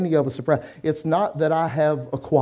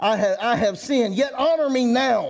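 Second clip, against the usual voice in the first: slow, high-pitched, rebellious, arrogant tone; 7 semitones higher than usual. A preacher acts out the sinning king's words to the church with a mock arrogant attitude. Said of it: "I'm doing it with a rebellious, arrogant attitude".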